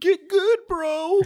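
put-on squeaky child's voice, very high and loud. Mocking young kids who trash-talk after a kill in Call of Duty, squeaky kid voice. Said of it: "with their squeaky voice".

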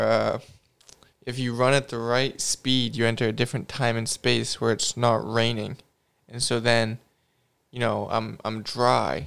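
ordinary talk

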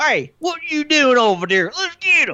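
put-on very high, loud southern country hillbilly accent. Describing bandits who start chasing him, mimicking them in a southern country bumpkin accent. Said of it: "southern country bumpkin people".

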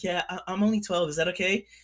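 put-on high, girly voice. Retelling a story about Shaz, imitating Shaz's girl voice. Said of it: "there goes Shaz just talking like a girl".

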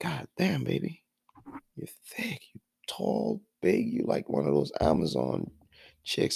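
words murmured under the breath in a hushed whisper. Retelling what was said to a woman: retelling a whisper. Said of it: "I whispered in there".

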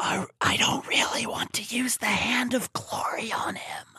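whispered, breathy, barely voiced. Retelling what two people said just outside a room: imitating someone whispering. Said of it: "whispering like this".

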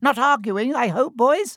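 very high, loud squeaking voice. Narrating a story, a professor interrupts two arguing boys: squeaky Flitwick voice. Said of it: "he squeaked".

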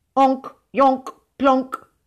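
firm, decisive voice. Narrator reads a character answering in invented ghost language, firmly. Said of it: "he said firmly".

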